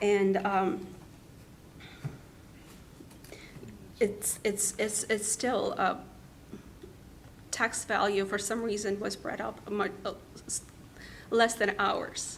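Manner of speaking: stammering and tripping over words. Comparing another house's tax value to their own, stuttering. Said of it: "I'm stuttering and I I just can't".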